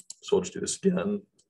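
high little voice crack mid-phrase. Walking through a 3d modeling step, repeating it: voice crack. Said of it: "Little voice crack in there".

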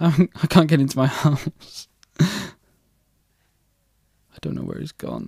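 frightened. Player can't get home while a creeper hunts them in a game, scared. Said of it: "I'm scared".

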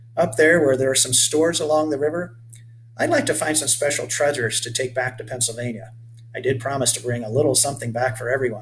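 plain

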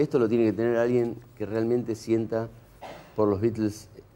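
ordinary talk, nothing marked

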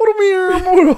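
high, loud, belted cartoon hero voice. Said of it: "You sound like a cartoon character".

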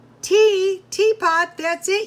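high, loud, shouted yell. Hearing someone offer to put the teapot on, the speaker starts yelling. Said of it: "yelled [name]".

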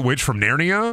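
ordinary talk

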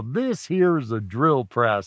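heavy, big, stretched-out drawl. Imitating how he introduced the drill press each semester, with a big old drawl. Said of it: "he'd say it with a big old drawl".

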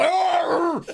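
high-pitched aggressive roar. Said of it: "just literally aggressive".

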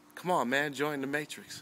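put-on sarcastic tone. Retelling a friend's reply after declining his fantasy football invite, imitating sarcasm. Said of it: "He was being sarcastic".

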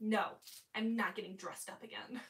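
mock-grumpy, put-on grumpy tone. Retelling Grandma's answer to an offer, imitating her grumpy refusal. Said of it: "grumpy grandma refusing, performed quote".

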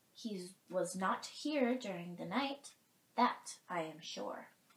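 ordinary delivery, nothing marked

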